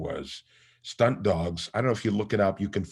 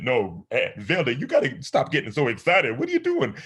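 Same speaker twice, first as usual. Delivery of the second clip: high, swooping character voice; 5 semitones higher, 4 dB louder than usual. Switching between two characters, now as Crash: Crash character voice. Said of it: "I would have to switch from one".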